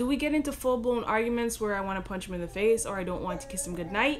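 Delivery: ordinary delivery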